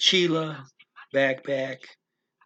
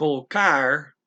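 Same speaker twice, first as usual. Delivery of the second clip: colocar with loud, punched stress on car; 5 dB louder than usual. Spanish lesson on words ending in r, loud stress on car in colocar. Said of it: "why am I saying car loudly? Because it ends with an R".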